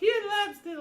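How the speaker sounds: tiny, very high-pitched small voice. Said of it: "you'll hear a small voice go".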